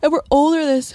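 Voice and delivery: words stretched by a yawn. Talking about being older with another kid, speaking through a yawn. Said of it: "Sorry, yawning".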